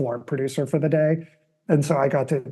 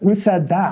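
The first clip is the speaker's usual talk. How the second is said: annoyed, testy, angry, raised, high-pitched voice; 5 semitones higher, 6 dB louder than usual. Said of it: "like where she's like pissed".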